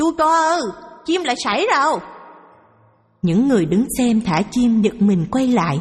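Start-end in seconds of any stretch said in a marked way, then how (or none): 0.0-2.0 put-on frantic, alarmed, shrill shriek, thick central Vietnamese accent. A bird seller suddenly cries out to the crowd, screaming in alarm. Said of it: "bà bán chim lại hét thất thanh".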